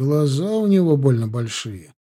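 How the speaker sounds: ordinary delivery, nothing marked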